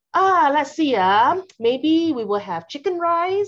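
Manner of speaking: Singaporean English accent. Demonstrating how a chat among friends sounds, in a Singlish accent. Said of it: "you see that accent coming in".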